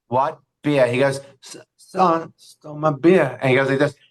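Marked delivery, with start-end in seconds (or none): 1.4-3.3 very slow, barely-there mumble, words barely coming out. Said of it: "he can barely speak".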